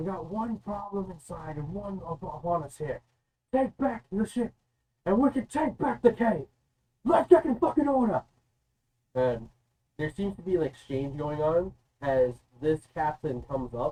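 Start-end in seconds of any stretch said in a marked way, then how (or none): 0.0-8.2 loud shouting, rising in pitch. Voicing someone on a ship shouting out to the crew: shouting orders. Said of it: "you can hear a voice shouting out".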